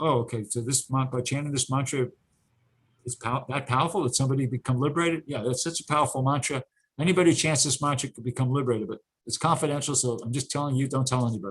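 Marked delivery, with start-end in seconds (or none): none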